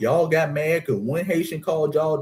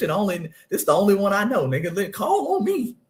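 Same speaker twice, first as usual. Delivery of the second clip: put-on excited, eager kid voice, rising pitch; 4 semitones higher than usual. Recalling being a kid in class who knew the answer: acting out his excited kid self. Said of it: "I used to be excited".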